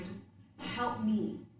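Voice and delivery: mock imploring, pleading, begging tone. Retelling asking a mother for help: retelling own begging. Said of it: "I'm just begging".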